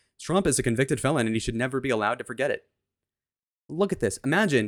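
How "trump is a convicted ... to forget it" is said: normal talking voice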